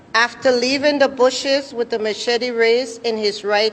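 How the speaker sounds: ordinary delivery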